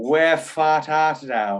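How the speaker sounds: slow put-on Boston accent, words drawn out. Speaker retells quoting Romeo and Juliet, Boston accent quote. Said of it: "quoting Romeo and Juliet in a Boston accent".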